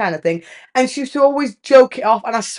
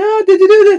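raised shout, pitched up; 9 semitones higher, 6 dB louder than usual. Speaker retells a woman calling from the kitchen, imitating someone shouting. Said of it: "she's shouting from the kitchen".

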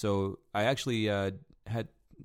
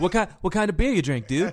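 put-on, very high, loud, chummy, friendly bouncer voice; 10 semitones higher, 8 dB louder than usual. Retelling chatting with a customer while bouncing: imitating own warm friendly chat. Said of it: "the persona that I took on when I was bouncing".

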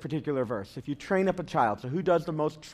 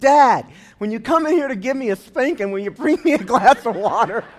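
put-on very loud, high-pitched child's yell; 6 semitones higher, 10 dB louder than usual. Retelling a story's ending where the son calls to his dad: imitating a son yelling. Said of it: "his son yells out to him".

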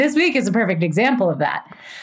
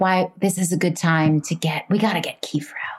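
mock feverish, urgent whisper, much lower; 5 semitones lower, 3 dB quieter than usual. Describing a woman plotting to herself in the mirror, retelling a feverish whisper. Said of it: "she's whispering like".

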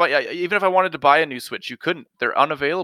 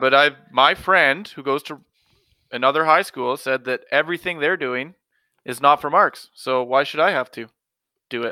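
ordinary delivery

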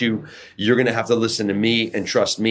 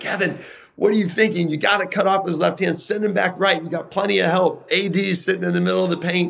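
mock very high, shrill sideline hollering; 9 semitones higher than usual. A coach retells yelling at a player during an All-Star game; retelling yelling at a player. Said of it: "I'm yelling at Kevin".

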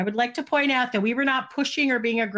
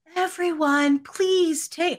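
put-on very soft female voice, much higher pitch; 6 semitones higher than usual. Retelling an event, imitate the lady addressing the crowd with the softest voice ever. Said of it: "this lady with like the softest voice ever".

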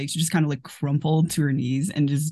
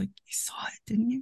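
small, hushed, very soft, plaintive little voice; 7 semitones higher, 10 dB quieter than usual. Erica grabs Brian's hand from the ground and speaks to him, little plaintive voice. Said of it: "says in this like this little plaintive voice".

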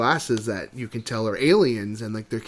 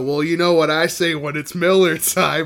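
put-on swaggering movie-hero voice, higher and louder; 6 semitones higher, 7 dB louder than usual. Retelling a movie scene at the airport: Jack Burton impression. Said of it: "Kurt Russell acting like John Wayne".

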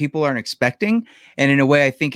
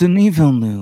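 mocking snooty, pretentious pronunciation; 4 dB louder than usual. Imitating a co-host saying a director's name: imitating co-host's douchey pronunciation. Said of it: "say it in the douchey way that he says it".

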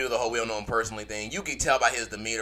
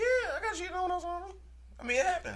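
much higher, quieter voice; 6 dB quieter than usual. Admitting to friends that he got cheated on, voice going high. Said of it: "Why your voice get so high?".

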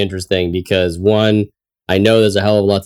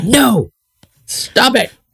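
put-on strict teacher scolding, pitched higher.

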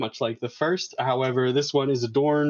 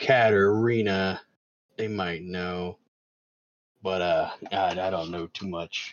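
very deep, very low gruff orc rumble; 7 semitones lower than usual. Voicing an orc in a role-playing game, answering a player's question, very gruff. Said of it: "very gruff, it's a very gruff voiced orc".

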